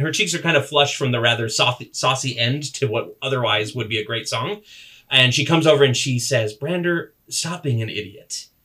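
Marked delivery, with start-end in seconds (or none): 6.5-8.5 youthful elf maiden voice. The narrator voices her as she comes over to scold Brander: young elven voice. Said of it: "a young elven voice".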